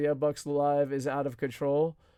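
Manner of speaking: normal talking voice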